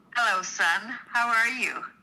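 flat, robotic, mechanical line reading. Running a scripted line on a partner's cue, flat robotic line reading. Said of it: "You sound like Siri".

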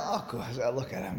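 soft, smiling, laughing proud tone. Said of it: "with a big smile".

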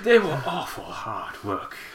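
soft, affected, put-on upper-crust accent. Commenting over a court report, voicing a quoted man in a posh voice. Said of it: "let's put a posh voice on him".

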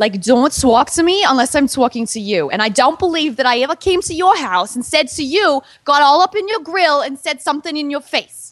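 heavy, laid-on New Jersey accent.

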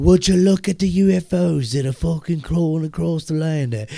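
loud, ridiculous, bad fake English accent. Mocking how a documentary narrator talks, doing a real bad English accent. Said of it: "talks like he's got a real bad English accent".

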